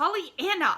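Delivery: sharp scolding tone. Reading an aunt's reply as she cuts off her niece: very sharp. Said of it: "spoke very sharply".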